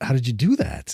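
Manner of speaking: normal talking voice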